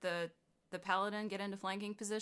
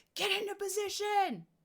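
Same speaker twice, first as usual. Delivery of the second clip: very high, far-carrying shouted voice; 12 semitones higher, 3 dB louder than usual. Playing a character who shouts over to an ally: shouting. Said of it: "I'm going to shout over behind him".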